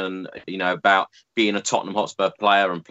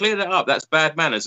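acted-out shouting; 8 semitones higher than usual. Speaker repeats what they were shouting at the TV, retelling a shout at the TV. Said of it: "what I was shouting at the TV".

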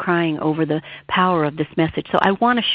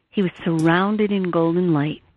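plain

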